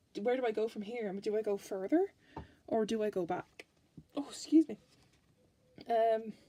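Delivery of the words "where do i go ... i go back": ordinary talk, nothing marked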